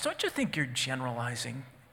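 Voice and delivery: put-on calm tone. Speaker retells answering a man who was cussing him out: retelling own calm reply. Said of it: "So in a relatively calm voice".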